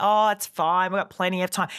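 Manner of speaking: ordinary talk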